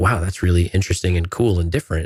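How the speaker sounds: ordinary talk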